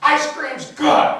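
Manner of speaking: loud, high, slow angry shout.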